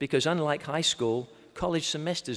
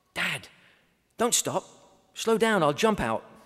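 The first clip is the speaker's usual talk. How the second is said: put-on firm, bossy, commanding small little girl voice; 4 semitones higher than usual. A dad retells what his daughter said as they approached: imitating Emma's commanding little voice. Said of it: "in a very commanding but little voice".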